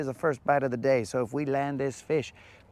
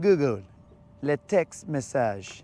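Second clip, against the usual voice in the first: put-on, fumbling, halting French accent. Trying out a French accent live on camera: put-on French accent. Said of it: "Trying to work out that French, French accent here".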